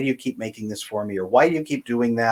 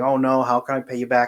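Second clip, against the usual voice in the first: mock panicked freaking out. Describing how a man does not react to a favor, acting it out: mock freaking out. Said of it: "He's not freaking out about it and saying".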